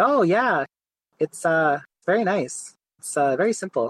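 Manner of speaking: put-on Quebecois accent. Retelling a hockey goalie's reaction to his helmet: imitating a thick Quebecois accent. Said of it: "he has a really thick Quebecois, like, accent".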